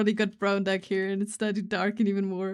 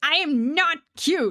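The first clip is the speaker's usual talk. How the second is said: very loud, indignant, offended outburst; 7 semitones higher, 4 dB louder than usual. Recalling their answer at age four to people calling them cute, retelling a loud offended outburst. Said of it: "Very loudly, very offended".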